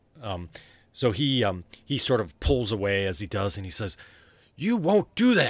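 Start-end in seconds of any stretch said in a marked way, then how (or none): 4.6-5.5 very high, loud shout that rings out. Game master voicing Rufus as he pulls away in the scene, Rufus yelling. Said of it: "And it yells, and it kind of reverberates".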